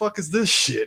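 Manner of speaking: high, utterly confused outburst, acted out. Retelling the Borg facing a medical hologram: mock-confused Borg. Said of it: "Just the most confused".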